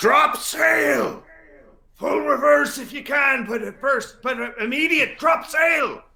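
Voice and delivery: very high-pitched, barking, commanding shout. Voicing a captain ordering sailors to drop sail: commanding shout. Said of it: "shout in his most commanding Goryo voice".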